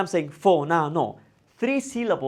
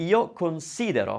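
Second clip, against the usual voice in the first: considero said with stress on si. Italian lesson on verb stress with io considero: stress on the si syllable. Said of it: "I'm stressing the si".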